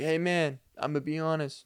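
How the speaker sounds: put-on easing into a Spanish accent.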